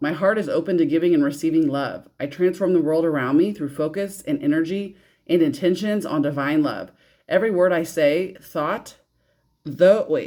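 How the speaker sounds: usual speaking voice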